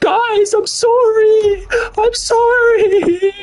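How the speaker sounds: mock, very high, sobbing, whimpering crying voice. Mocking someone who apologizes on the internet, in a mock crying voice. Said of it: "I'm not crying on the internet like".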